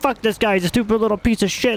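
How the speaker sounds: high, furious, mock screaming rant. Imitating an angry player in voice chat: imitating someone screaming angrily. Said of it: "just screaming".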